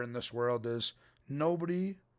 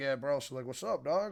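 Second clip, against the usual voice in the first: put-on silly, joking tone. Retelling how they talk to the dog when joking: imitating own silly joking tone. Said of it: "silly mood, I'm just, like, joking".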